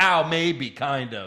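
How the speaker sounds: put-on upset wrestler voice. Retelling how a wrestler looked after going through a table: imitating Ronda Rousey acting upset. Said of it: "she just looked upset, like".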